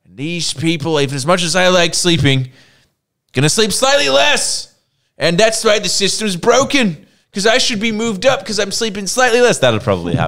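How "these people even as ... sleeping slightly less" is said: very high-pitched, loud, fired-up rant. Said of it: "Or I would just be like".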